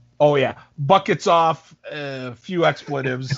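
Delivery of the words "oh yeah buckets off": usual speaking voice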